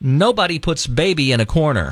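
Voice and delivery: ordinary talk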